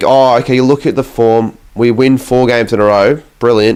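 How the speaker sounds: ordinary delivery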